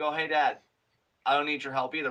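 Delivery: put-on playful, teasing voice. Retelling Dominic's line to his father leaving the ring: imitating Dominic, playful. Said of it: "but kinda playfully".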